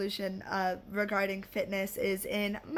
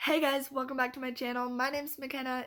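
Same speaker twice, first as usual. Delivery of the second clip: sick-sounding voice, higher pitch; 4 semitones higher than usual. Welcoming viewers back to the channel: voice affected by illness. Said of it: "Ignore my voice".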